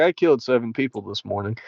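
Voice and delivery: play-acted deadpan, emotionless, flat, soft monotone. Speaker mocking a commentator they call emotionless: imitating a monotone commentator. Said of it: "He's so fucking monotone and like emotionless".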